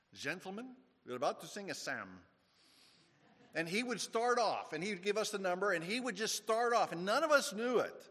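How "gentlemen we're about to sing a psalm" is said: put-on good, proper Scottish accent. Retelling how the Scottish teacher addressed the class every morning, in a Scottish accent. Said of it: "in his good Scottish way and say".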